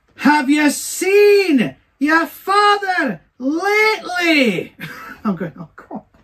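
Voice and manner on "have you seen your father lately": mock very high, very slow, loud old-lady shriek. Retelling a little old lady on a dance floor screaming at a lad, imitating her screaming. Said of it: "she screams at him".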